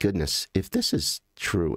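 ordinary talk

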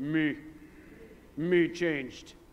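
breathy, hushed, whispered caveman voice. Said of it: "Say it like a caveman".

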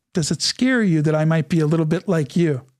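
ordinary talk

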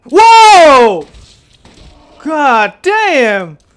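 very loud, very high, shrill, drawn-out shriek. Walking casually through a game when something startles them: extremely loud scream. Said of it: "Sorry for that extremely loud scream".

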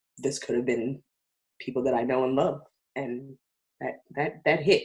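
choked up, emotional, halting, words breaking apart. Speaker reflects on a story they will tell this season, getting emotional. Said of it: "I'm actually getting emotional".

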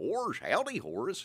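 high, silly, goofy cartoon dog voice. Voice actor showing how he switches between two characters, Goofy voice. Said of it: "And Goofy".

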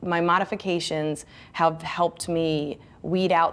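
normal talking voice

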